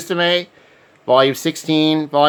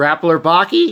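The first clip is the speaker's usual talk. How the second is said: sudden jump to a high pitch. Listing movies from a collection, voice going high-pitched. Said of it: "my voice got high pitched there".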